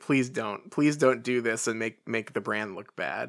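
ordinary talk

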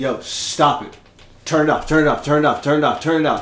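put-on low, grave, dead-serious, insistent, repeated delivery. Retelling a friend ordering the camera off: imitating Drew being dead serious. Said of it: "He's serious as shit".

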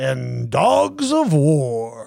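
goofy, silly funny voice, drawn out. Reading out a list of board game picks, the last title: funny voice. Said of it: "say that one in the funny voice".

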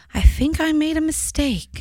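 put-on sweet, high little grandma voice. Retelling hearing grandma speak while their back was turned, imitating grandma's sweet little voice. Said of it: "I just hear her sweet little voice say".

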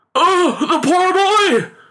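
very high, slow, drawn-out alarmed cry. A father sees his son's rope come tumbling to the ground: crying out in alarm. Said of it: "Cried the father in alarm".

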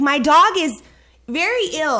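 high, drawn-out yell, crying through tears. Retelling pleading at an emergency clinic about a very ill dog: retelling yelling and crying. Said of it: "I'm starting to like yell and cry".

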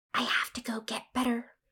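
soft, barely audible whisper. Matilda, knowing a new lesion is growing, speaks to the narrator, whispering. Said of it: "she whispered".

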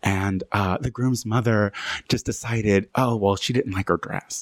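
hushed whisper. Telling listeners a story about a wedding, whispering. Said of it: "I don't know why I'm whispering".

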